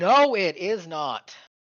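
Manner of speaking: loud shouting, calling out. A player's character shouts to others across a river; shouting. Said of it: "I'll just shout".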